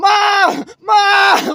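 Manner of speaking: very high, shrill, loud screaming call. Retelling being beaten up by their brother, calling out: retelling screaming for mom. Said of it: "screaming for my mom".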